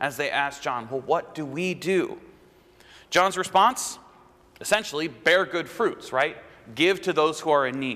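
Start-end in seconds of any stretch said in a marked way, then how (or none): 0.9-2.2 acted-out frightened, fearful voice. Speaker retells how the people asked John what to do: imitating fearful voices. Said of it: "you can hear the fear in their voices".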